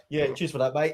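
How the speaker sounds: ordinary talk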